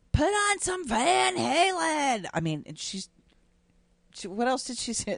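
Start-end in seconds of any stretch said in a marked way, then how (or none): 0.2-2.3 very high, dragged-out shriek. Retelling a bus ride to a concert, quoting a woman passenger, retelling a scream. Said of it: "this woman starts screaming".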